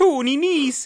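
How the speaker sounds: put-on Irish accent in a very high voice. Recalling a name stuck in the head, in a Father Ted Irish accent. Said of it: "it's almost like the Father Ted voice".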